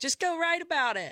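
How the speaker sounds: high, weary, worn-out voice. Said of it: "she was like".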